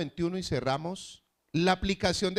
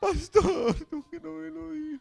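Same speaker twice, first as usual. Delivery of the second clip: pitched way up, tearful, crying; 9 semitones higher than usual. Retelling how a caller tearfully complained she had not been told something, imitating someone crying. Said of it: "me llamó una con lágrimas, llorando".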